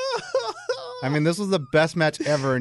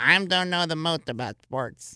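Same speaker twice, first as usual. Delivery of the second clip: slow, mocking intro voice. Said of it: "You just mocked your own intro".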